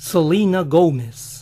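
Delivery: the name said with an English accent. Showing how the name selena gómez sounds in english, with an english accent. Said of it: "¿Y cómo sería Selena Gómez en inglés?".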